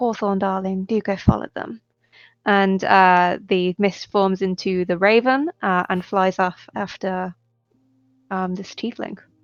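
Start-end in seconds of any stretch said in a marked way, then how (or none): 0.0-1.8 low mumble, half to oneself, under the breath. Voicing a character sending a raven after someone: muttering under his breath. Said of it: "mutter under his breath".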